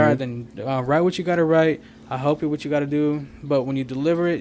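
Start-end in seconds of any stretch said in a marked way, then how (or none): none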